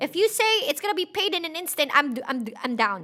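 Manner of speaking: stuttering. Afraid of being alone in the dark, the speaker reluctantly agrees anyway, stuttering. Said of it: "Sorry, I'm stuttering".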